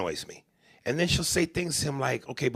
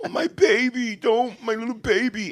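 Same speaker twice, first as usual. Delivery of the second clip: put-on pitched-up doting, babying, coddling mother voice; 7 semitones higher, 3 dB louder than usual.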